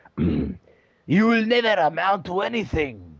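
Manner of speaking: heavy put-on Russian accent, very drawn out, slow, swooping. Impersonating their mother in a Vegeta voice: Russian Vegeta voice. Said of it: "in a Russian Vegeta voice".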